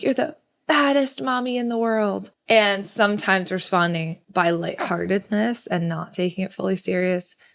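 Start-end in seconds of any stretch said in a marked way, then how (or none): 0.0-2.3 put-on cross, angry little kid's voice, pitched high. Retelling what the child said when mad: imitating a mad child. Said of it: "if she was ever mad at me".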